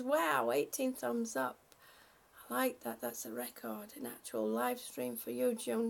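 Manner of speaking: ordinary delivery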